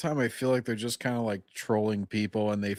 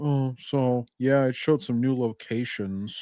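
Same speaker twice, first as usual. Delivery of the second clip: mock bored, lazy-sounding delivery; 2 semitones higher than usual. Mocking how other commentators talk: mocking other creators' bored talk. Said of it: "these guys just like".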